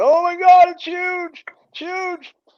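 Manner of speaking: very high, loud, stretched-out shriek of excitement. Retelling a fish coming out of the water: imitating own past scream. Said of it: "and I'm screaming".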